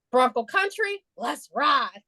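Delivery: strained, forced, try-hard aggressive tough-guy voice. Mocking an Instagram clip of him filming team photos: mocking a forced aggressive voice. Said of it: "trying to make his voice aggressive".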